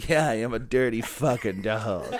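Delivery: slow, rolled-out put-on character voice. Playing the comic dog in an improvised scene: Marmaduke voice. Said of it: "let's try it out".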